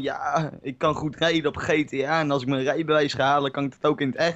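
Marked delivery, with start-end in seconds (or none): none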